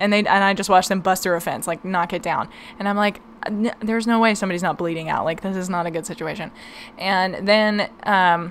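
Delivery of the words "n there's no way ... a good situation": ordinary talk, nothing marked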